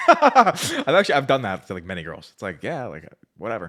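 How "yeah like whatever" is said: offhand, nonchalant, unimpressed, couldn't-care-less tone. Showing the act used on girls, mock-nonchalant and unimpressed. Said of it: "Nonchalant, unimpressed".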